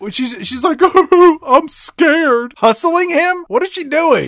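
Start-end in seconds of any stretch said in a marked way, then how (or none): 0.8-2.5 put-on fake-crying voice, much higher pitch. Recounting a scene where Brett starts fake crying: Brett's fake crying voice. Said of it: "she fake crying?".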